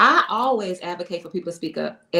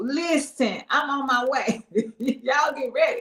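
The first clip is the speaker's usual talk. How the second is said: put-on unhurried, high, slow baby voice; 5 semitones higher than usual. Acting out what the baby would say during labor: voicing the baby. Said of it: "So the baby like".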